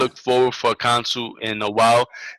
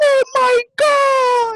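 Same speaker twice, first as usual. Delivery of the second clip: put-on very high sobbing, tearful, over-excited kid voice; 5 dB louder than usual. Retelling a YouTube meme of a kid opening a game: imitating an excited kid. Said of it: "remember those YouTube memes with the kids being all excited".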